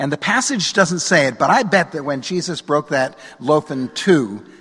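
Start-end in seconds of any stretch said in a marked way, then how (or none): none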